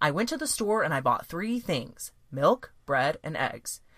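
set-up pause after "things", listing. Teaching voice delivery, doing a colon with the voice: colon pause after 'things'. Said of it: "You heard that I did a colon in my voice".

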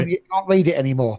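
normal talking voice

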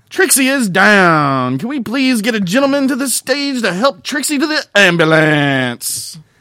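very loud, high, cheesy club DJ call. Imitating a strip club announcer after a dancer gets hit: crappy strip club dj voice. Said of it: "It's one of those crappy, like, strip club D Js".

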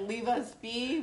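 half-screamed, held-in, sort of screaming. Playing a character facing a villain: kind of screaming. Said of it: "While kind of screaming".

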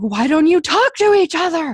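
high, loud, exasperated yelling.

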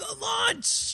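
big, hyped, high, loud shouted cheer.

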